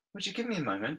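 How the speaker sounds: high half-whispered aside, said on the side. Voicing a character quietly excusing herself to a companion: half-whispering. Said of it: "Rose whispers over to Desiree and says".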